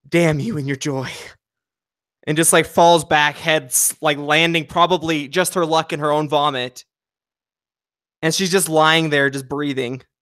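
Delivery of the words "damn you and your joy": muttered whisper under breath. Voicing a worn-out character muttering at her joyful companion: whispering under breath. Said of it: "she just whispers under her breath".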